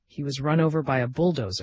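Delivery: ordinary delivery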